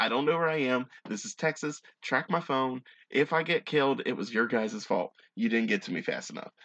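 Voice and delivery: ordinary delivery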